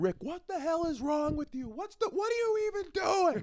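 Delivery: mock shrill, very high-pitched hollering. Retelling a phone call with a friend, imitating own yelling. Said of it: "so I'll be yelling".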